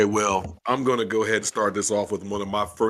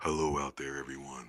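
eerie, creepy, very hushed half-whisper; 8 semitones lower, 12 dB quieter than usual. Greeting podcast listeners at the start of the show: creepy half-whisper. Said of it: "Don't whisper, bro".

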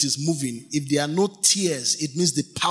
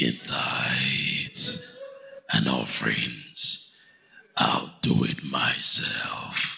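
very deep, low, slow, drawn-out voice. Reading God's reply from a Bible verse, second attempt: Thanos voice. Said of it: "Do I sound like Thanos now?".

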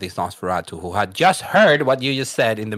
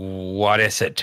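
thoroughly fed-up, very irritated, called out; 2 semitones lower than usual. Narrating a knock at the end of the night, voicing Alexander Walker, very irritated. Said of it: "a very, very irritated voice comes from within".

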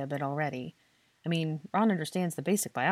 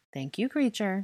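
kindly spoken, kind tone; 4 semitones higher than usual. A woman thanks a house elf for announcing her, kindly. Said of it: "she said kindly".

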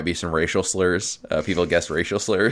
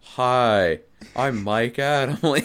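very slow, dull, pitched-up, "hi" drawn out; 6 semitones higher than usual. Mocking an announcer as the least charismatic person, boring Mike Adamle impression. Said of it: "That guy is the least charismatic person".

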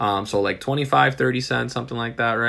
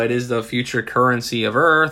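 ordinary delivery

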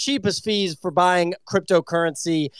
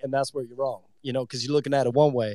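put-on low, fast-talking salesman voice impression. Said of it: "my little Grant Cardone impression".

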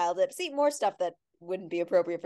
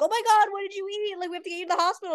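very high, rushed, frantic shrieking scream; 13 semitones higher than usual. Retelling a memory of mom screaming at them, imitating mom screaming. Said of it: "my mom like screaming at me".

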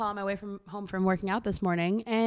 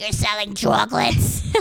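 put-on loud, rough, croaky, creaky crusty old lady voice; 6 dB louder than usual. Retelling a scene where characters sell chocolate door to door: imitating a crusty old fish lady. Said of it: "she's like this little old, like crusty fish".

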